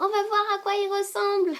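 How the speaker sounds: very high, little cartoon rabbit voice.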